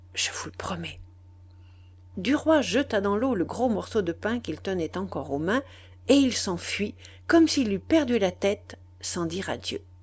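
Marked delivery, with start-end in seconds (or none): 0.2-1.0 murmuring softly, much quieter, a little troubled. Begged by Duroy to promise, she answers, murmuring, a little troubled. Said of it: "Elle murmura, un peu troublée".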